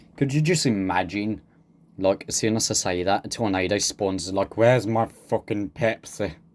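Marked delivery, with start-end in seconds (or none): 4.6-6.3 put-on Scottish accent. Imagining a tornado speaking after being offered a Pepsi, put-on Scottish accent. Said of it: "I don't know why I turned Scottish".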